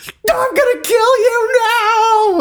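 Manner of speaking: mock hysterical yelling, very high and drawn out. Describing the movie, acting out a line: retelling Bennett's hysterical yell. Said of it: "Bennett starts hysterically yelling".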